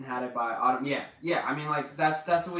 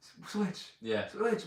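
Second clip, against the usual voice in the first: soft, hushed whisper; 7 semitones higher, 6 dB quieter than usual. Describing how people now talk about the switch: imitating people whispering. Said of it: "people whispering".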